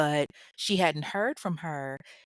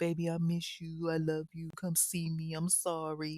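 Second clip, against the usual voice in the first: mock soft, honeyed, wheedling, coaxing sweet talk; 6 dB quieter than usual. Imagining how a man sweet-talked a woman into coming to see him, imitating sweet talk. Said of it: "he probably sweet talked to her".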